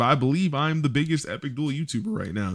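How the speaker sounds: excited, proud, voice cracking mid-word. A YouTuber talking to viewers about his channel, voice cracking with excitement. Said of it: "my voice cracked when I said that because I got a little excited".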